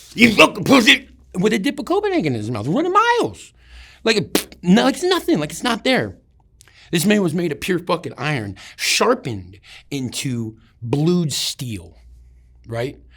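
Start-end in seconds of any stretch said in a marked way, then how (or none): 0.2-1.1 very loud, high, raging sergeant-style bellow. Retelling a first sergeant yelling at a runner falling behind: imitating a first sergeant yelling. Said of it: "he's yelling so loud".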